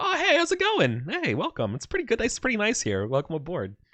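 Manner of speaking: very high, eager, swooping chatter. Voicing creatures who welcome the player as a new mind-controlled member: voices of dominated creatures. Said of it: "the other dominated creatures going like".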